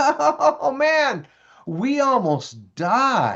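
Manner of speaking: acted, very drawn-out, laughing excitement, high and swooping. Acting out a teen shaking a best friend: imitating a kid laughing excitedly. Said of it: "you shook them and you laughed and you said".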